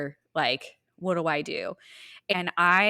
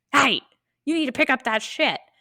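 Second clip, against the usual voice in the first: mock scream, pitched higher; 9 semitones higher than usual. Retelling how a giant man screamed at a teenage boy with his dog, imitating a scream. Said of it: "Literally literally screams".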